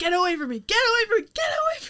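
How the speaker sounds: frantic, panicked, very high-pitched and loud. Retelling a movie scene, Holmes freaking out: imitating panicked Holmes. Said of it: "Holmes freaking out".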